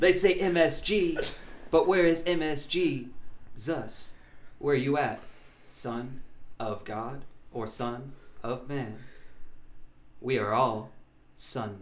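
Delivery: slow, measured spoken word slam poetry cadence. Performing a joke slam poem for the others: slam poetry delivery. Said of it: "Slam poetry?".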